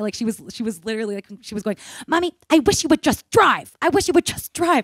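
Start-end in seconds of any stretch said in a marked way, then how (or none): 2.1-4.8 put-on very high, loud, shrill tantrum of a small child. Retelling a three-year-old's words in a parking lot: imitating a toddler's meltdown. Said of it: "she had a meltdown in the parking lot".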